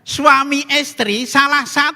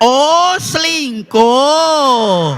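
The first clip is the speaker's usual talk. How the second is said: mock, acted-out loud shouting. Telling a joke, the half-deaf priest repeats the confession: retelling a louder shout. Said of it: "Romo nih teriaknya lebih keras".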